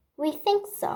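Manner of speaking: small, tiny, high, squeaky creature voice. Reading a story aloud, a seahorse answers a question, in a tiny voice. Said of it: "explained it in a tiny voice".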